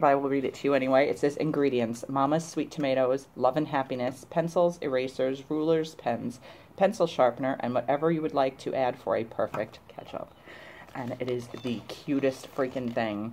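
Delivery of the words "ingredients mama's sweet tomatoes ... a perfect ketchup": normal talking voice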